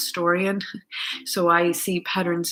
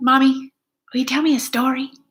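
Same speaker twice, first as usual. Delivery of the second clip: put-on high, raised small little girl voice; 7 semitones higher, 7 dB louder than usual. A mother recalls her daughter's repeated request, imitating her little girl's voice. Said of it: "In her little girl voice".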